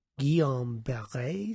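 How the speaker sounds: French pronunciation with a French accent. Naming a syndrome in a talk about shingles: French accent. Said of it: "See? French accent".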